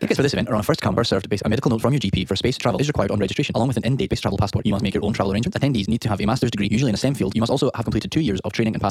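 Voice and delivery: rapid-fire American commercial disclaimer rattle. Reading the event's terms and conditions like american commercials do; fast american commercial read. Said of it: "read it in the style American commercials that do it really fast".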